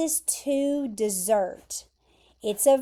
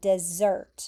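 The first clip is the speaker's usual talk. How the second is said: dessert with stress placed on the second syllable; 4 semitones lower than usual. Teaching the pronunciation of dessert: stress on second syllable of dessert. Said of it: "The emphasis is there at the end".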